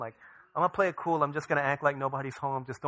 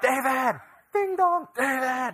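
very high, very slow, drawn-out yell; 11 semitones higher, 7 dB louder than usual. Retelling how the elderly lady next door yelled at the door: imitating a neighbor yelling. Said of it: "she's yelling at me".

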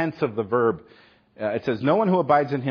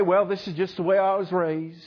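put-on American Southern accent; 5 semitones higher than usual. Speaker voicing a hypothetical believer's excuse, in a put-on southern accent. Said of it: "There goes that southern accent again".

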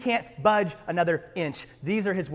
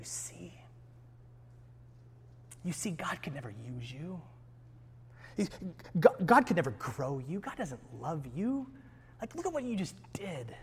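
put-on accusing whisper, spoken more quietly; 10 dB quieter than usual. Acting out the accuser speaking to someone who failed: Satan whispering in your ear. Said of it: "he whispers into your ear".

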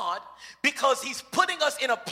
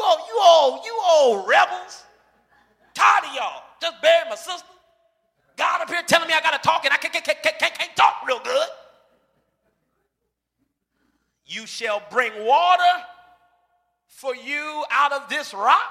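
mock irate, angry scolding rant with cussing; 3 semitones higher, 4 dB louder than usual. Reading a Bible passage and acting out Moses scolding the rebels: Moses cussing them out. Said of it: "Moses out here cussing at him".

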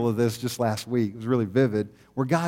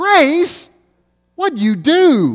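shrill, full-volume, swooping, very high drawn-out scream; 11 dB louder than usual. Retelling a daughter yelling at her brother: imitating Macy screaming. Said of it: "she screams".

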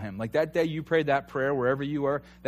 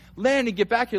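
re-enacted yell, much higher; 8 semitones higher, 5 dB louder than usual. Recounting a three-year-old running off down the aisle, retelling a yell. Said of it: "I'm yelling".

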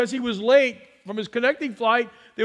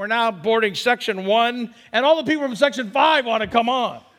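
normal talking voice

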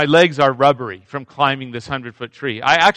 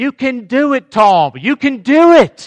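forceful encouraging yell, loud, very high and drawn out; 10 semitones higher, 5 dB louder than usual. Retelling how the woman holding the rope yelled up: imitating someone yelling. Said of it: "she starts to yell".

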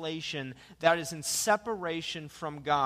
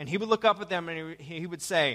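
normal talking voice

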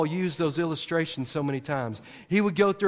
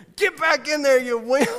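put-on scream, higher and louder; 9 semitones higher, 5 dB louder than usual. Retelling a sister telling her limping brother to return: imitating Courtney screaming. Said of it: "is screaming".

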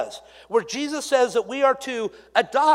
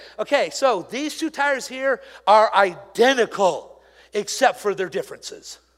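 plain

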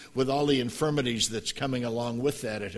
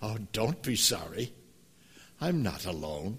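put-on sweet little voice, English accent; 3 semitones lower, 6 dB quieter than usual. Retelling an injured woman's reply to an apology, imitating Margaret's sweet English voice. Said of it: "she said in that sweet little voice with an English accent".

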